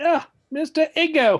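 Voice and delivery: put-on South African accent, very high and loud. Commenting on a player shown on tv, he tries a south african accent. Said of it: "I was trying to do a South African accent".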